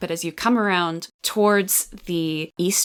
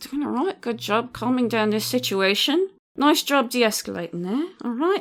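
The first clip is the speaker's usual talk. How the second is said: spoken through clenched teeth at a higher pitch; 4 semitones higher than usual. Voicing Beatrix Todd after Father Underwood speaks: talking through her teeth. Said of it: "sort of talks through her teeth".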